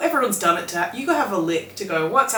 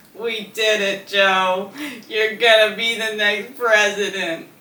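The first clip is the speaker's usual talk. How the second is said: quick, reluctant, half-hearted put-on voice. Trying an impression after being asked for one: Kamala Harris impression. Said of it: "can you do Kamala Harris?".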